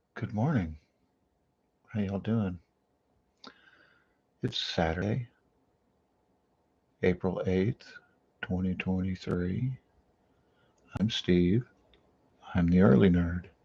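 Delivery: talking quietly. Host greeting listeners in the morning, trying not to wake anyone, talking quietly. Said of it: "the reason I'm talking quietly".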